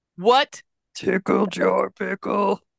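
gravelly put-on monster voice. Joking around with the others, in a Cookie Monster voice. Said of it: "Like Cookie Monster went through the garbage disposal".

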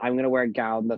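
ordinary talk, nothing marked

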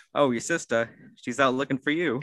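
ordinary talk

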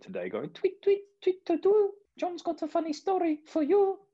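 very high, swooping, sing-song silly bird chirp. Introducing John's funny story to the listeners, in a silly voice. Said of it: "Every time you do a silly voice".

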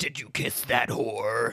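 low, crazed voice. Recapping an episode, the speaker quotes Pete attacking Oz in Pete's crazy voice. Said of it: "His voice is so crazy".

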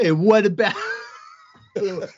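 over-the-top Italian accent. Urged to do a bit more, speaker tries an exaggerated Italian accent. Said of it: "Can you do a little bit more?".

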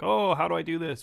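usual speaking voice

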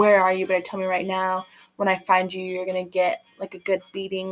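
put-on super angry voice. Retelling a book's plot, acting out T-Ray on the phone: imitating T-Ray super mad. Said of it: "super mad at her and is like".

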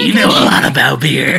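raspy, gravelly voice. Retelling how a friend talked him into applying, imitating the friend. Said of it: "like dead on impression".

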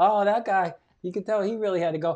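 mimicked laughing sounds. Hiding in a bathroom, retelling what people at the bar said, imitating people laughing. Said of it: "They're kind of like laughing".

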